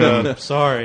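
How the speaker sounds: put-on depressed-sounding tone. Teasing another speaker by imitating how they said sorry: imitating a depressed-sounding friend. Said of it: "you sound depressed".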